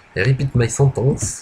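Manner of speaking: speaking with English accent. A French speaker, doing this for fun, repeats a sentence in an English accent. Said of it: "j'ai un super anglais, accent anglais".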